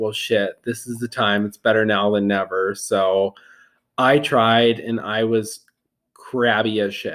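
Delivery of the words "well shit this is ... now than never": plain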